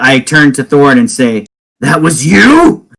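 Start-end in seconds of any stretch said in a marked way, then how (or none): 1.8-2.8 angry, seething words through gritted, clenched teeth. A player's character turns to another character, speaking through clenched teeth. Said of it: "between clenched teeth".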